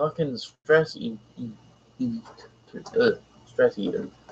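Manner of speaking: stumbling, hushed, breathy whispered stammer. Speaker recording a video, which makes it worse, stammering. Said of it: "Sorry, stammering".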